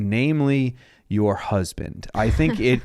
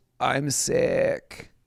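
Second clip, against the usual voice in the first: put-on moan, quieter; 2 semitones higher, 4 dB quieter than usual. Joking about avoiding the draft, imitating a moaning voice. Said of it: "moan moaning voice".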